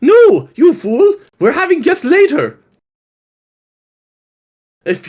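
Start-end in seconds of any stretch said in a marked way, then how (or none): 0.0-2.6 shrill, sing-song, very high, loud, swooping put-on voice. Voicing a character in an acted scene, high-pitched character voice. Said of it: "you're doing your high pitched voices".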